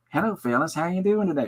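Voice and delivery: sweet, lifted, high-pitched voice. Retelling how Fred Rogers greeted the hungover crew: Fred Rogers impression. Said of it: "Fred would always come over and go".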